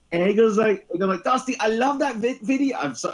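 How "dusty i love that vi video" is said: higher-pitched put-on Dutch accent, childlike. Retelling what a kid from the Netherlands said to Dusty: imitating a Dutch accent. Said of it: "sorry for my accent".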